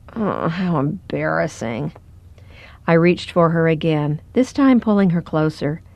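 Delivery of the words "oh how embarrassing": soft, sheepish mumble under the breath. After jerking away from a comforting hand, she turns back, muttering sheepishly. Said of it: "she muttered sheepishly".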